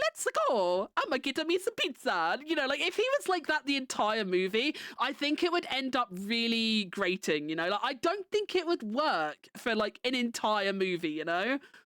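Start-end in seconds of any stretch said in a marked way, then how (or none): 0.0-2.4 swooping-pitch cartoonish Italian plumber voice. Discussing the Mario movie's casting, imagining a whole film in Mario voice. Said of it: "the entire movie for the Mario movie was Mario like".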